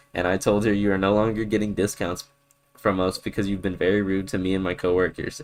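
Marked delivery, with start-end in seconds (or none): none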